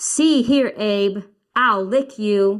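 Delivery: firm, very slow, forceful. Showing how a boy character should say his line to abe, forceful, not yelling. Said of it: "they're not yelling, but they're being forceful".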